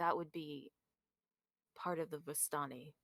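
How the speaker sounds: voice dropped a little. A character glances at three men and answers about Eva: lowered voice. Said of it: "he kind of like lowers his voice a little".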